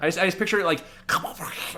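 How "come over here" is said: whispered, creepy, luring come-hither voice. Acting out a river creature calling a kid over: creepy luring voice. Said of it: "something, like, creepy".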